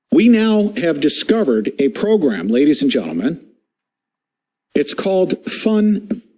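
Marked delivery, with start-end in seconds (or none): 4.7-6.1 high voice, laughing through the words. A presenter introducing videos to an audience breaks up, laughing while talking. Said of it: "I'm laughing".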